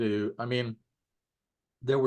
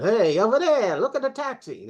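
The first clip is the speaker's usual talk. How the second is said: put-on New York Bronx accent. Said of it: "So he did a Bronx".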